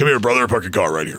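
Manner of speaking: low voice of a street guy. Speaker demonstrates the voice he slipped into: car-parking street dude voice. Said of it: "That voice is like the dude that helps you park your car".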